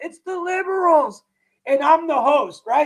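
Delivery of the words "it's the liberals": acted-out, high-pitched, top-of-the-lungs ranting yell. Retelling how Ryan used to blame the liberals: imitating someone screaming. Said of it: "screaming at the top of his lungs".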